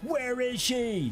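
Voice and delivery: put-on screaming. Doubting that a police officer would be imitating someone screaming. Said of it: "sitting there screaming".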